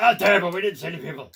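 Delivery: gruff monster voice. Voicing the first mate character in a game, in a gruff orc voice. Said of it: "I had to get a gruff voice".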